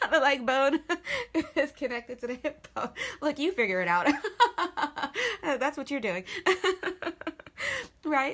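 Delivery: loud, high, laughing through the words.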